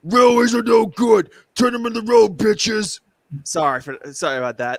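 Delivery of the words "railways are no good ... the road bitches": deep cartoon steamroller character voice. Showing the voice once played for George the Steamroller: deep George the Steamroller voice. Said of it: "I was also the voice of Georgia Steamroller".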